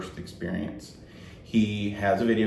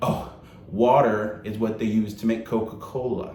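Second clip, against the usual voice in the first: mock condescending, patronizing, talking-down tone. Retell a woman explaining the text to your group, imitating someone very condescending. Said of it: "Lamia is very condescendingly speaking to us".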